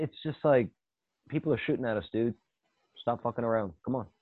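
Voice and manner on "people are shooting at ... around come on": put-on deadpan, matter-of-fact delivery. Retelling a movie character's line: imitating a matter-of-fact delivery.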